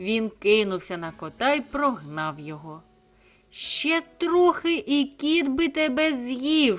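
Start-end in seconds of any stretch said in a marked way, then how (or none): 3.5-6.8 high shout, final word "z'yiv" drawn out. A rooster, having chased off a cat, shouts at a chick. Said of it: "закричав півень".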